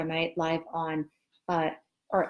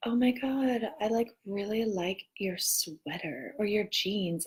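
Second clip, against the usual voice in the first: mock, clearly put-on, fake, insincere tone; 3 semitones higher, 4 dB quieter than usual. Imitating someone who comes up with a compliment: imitating a fake compliment. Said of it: "they say it, like, all, like, fake".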